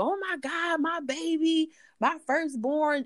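acted very high, stretched-out, drawn-out screaming cry. Retelling a birth mother's reaction on the phone: imitating a screaming mother. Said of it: "she's screaming".

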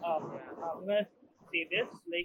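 very quiet, soft, barely audible talk.

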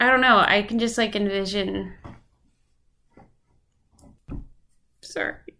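tearful, in tears, getting emotional. Recording an episode, the speaker breaks off mid-memory, crying. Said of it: "I don't know why I'm getting so emotional".

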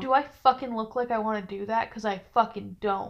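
ordinary talk

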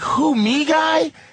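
put-on snarky tone. Imitating how another person sounds: imitating a snarky tone. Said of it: "'cause he sounds snarky".

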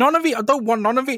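very high, shrill, rattled-off screaming. Recalling opening a window full of flying ants; retelling a scream. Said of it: "Just screaming".

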